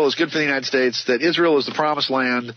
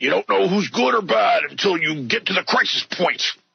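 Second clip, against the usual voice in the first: put-on radio broadcaster voice, pitched up; 6 semitones higher than usual. Quoting a line, doing an Alex Jones impression. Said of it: "that's my Alex Jones impression".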